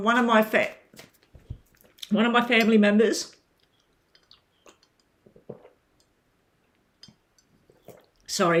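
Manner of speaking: sputtering and choking, stumbling mid-sentence. Telling viewers about a family member's children; choking on bread. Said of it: "I'm choking on bread".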